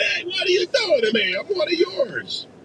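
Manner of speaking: very high-pitched, squeaky voice. Imagining what Phil Murphy says while watching: imitating Phil Murphy. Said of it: "I wonder if Phil Murphy was watching this going".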